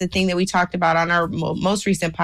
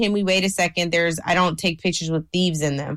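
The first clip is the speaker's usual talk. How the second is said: ordinary talk, nothing marked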